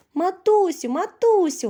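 delighted, high, joyful shout. A little son calls out to his searching mother with a joyful shout. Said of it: "радісно закричав малюк".

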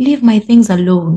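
calm, kindly, gentle and mild tone. Teaching the difference between angry and gentle tones, gentle tone. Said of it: "Now that's gently. That's a gently tone".

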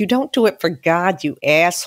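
put-on blunt, curt delivery in a Boston accent. Retelling Janice's reply to him, imitating Janice's Boston accent. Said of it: "what kind of God wants me to grovel and go".

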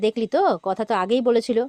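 plain

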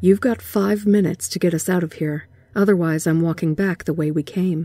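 ordinary talk

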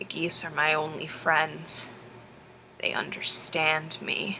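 low, slow, close-in confiding whisper. Retelling what a child leaned in close and said: imitating a dropped voice. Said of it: "his voice drops and he goes".

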